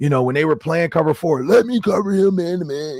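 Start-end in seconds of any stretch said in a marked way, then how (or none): 1.4-3.0 high, accusing, blaming shout. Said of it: "he's yelling as if it's their fault".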